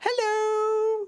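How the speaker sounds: stretched, drawn-out, very high squeaky voice. Showing how they say hello when visiting other streams: very high-pitched voice. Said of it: "say hello in a very high-pitched voice".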